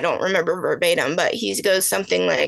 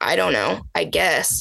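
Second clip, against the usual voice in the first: mock-defeated tone, slow, acted-out defeated speech. Retelling a man's answers to a detective, imitating slow, defeated talk. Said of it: "he's talking slow and like just complete like defeat".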